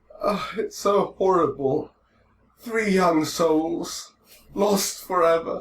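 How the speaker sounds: very high, loud, lordly, mournful lament. Voicing the Lord as he laments three lost souls: the Lord lamenting. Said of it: "the Lord is sitting there like".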